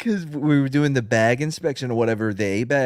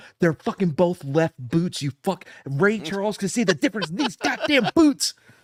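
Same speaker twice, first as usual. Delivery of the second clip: angry sergeant voice, furious, higher; 6 semitones higher than usual. Retelling how a sergeant reacted to two left boots: imitating an angry sergeant. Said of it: "And he was so pissed".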